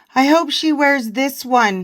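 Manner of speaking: ordinary talk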